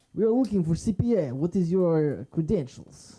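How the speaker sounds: slow, high, put-on Russian gangster accent. Imagining a Russian mobster interviewing someone for a job, Russian mobster voice. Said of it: "some sort of like Russian mobster".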